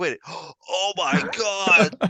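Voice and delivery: high, slow stunned gasp. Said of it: "but I'm like".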